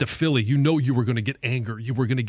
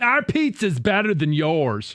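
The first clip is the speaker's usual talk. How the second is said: put-on New York accent, done badly; 4 semitones higher than usual. Imitating an arrogant New York fan: bad New York accent. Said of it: "I can't even do a good impression".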